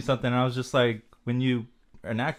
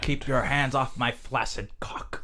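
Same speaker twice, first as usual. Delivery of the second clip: put-on old man voice. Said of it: "You sound just like that guy".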